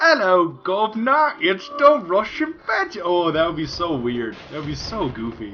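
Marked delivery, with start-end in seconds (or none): 0.0-3.0 fake English accent, high and slow. Speaker imagining coming back from vacation with a fake English accent. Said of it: "came back from vacation with like an English accent".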